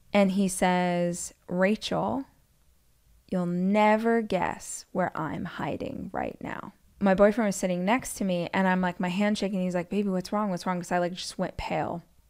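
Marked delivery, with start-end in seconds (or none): 1.4-6.7 creepy, sinister, menacing, threatening male voice. Retelling a voicemail from an unknown caller, imitating a sinister man's voice. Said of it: "It is a man's voice, super sinister".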